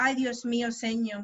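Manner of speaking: plain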